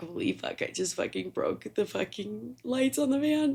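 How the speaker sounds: under-the-breath rising panic. Telling a story about breaking the van's lights, the speaker quotes herself, retelling near-panic. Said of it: "I'm like trying not to have a panic attack".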